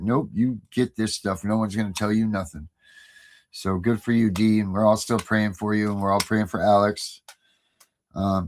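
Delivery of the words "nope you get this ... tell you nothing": ordinary talk, nothing marked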